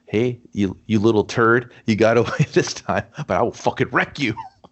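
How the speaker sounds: put-on condescending voice. Retelling a film scene, imitating the character Jerry: condescending Jerry impression. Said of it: "He's so condescending when he speaks".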